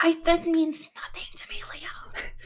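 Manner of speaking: hushed, quiet whisper. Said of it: "whispers it in her head to Leon".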